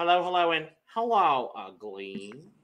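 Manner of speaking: loud, sloppy put-on voice with puffed, stuffed cheeks. Say hello in an impression of them that has gotten worse. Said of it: "My impression of them has gotten worse".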